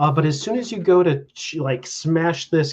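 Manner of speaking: ordinary delivery, nothing marked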